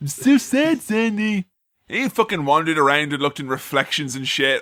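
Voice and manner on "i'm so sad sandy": put-on sad voice, higher. Mocking Danny feeling sorry for himself: mock sad Danny voice. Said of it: "He's like".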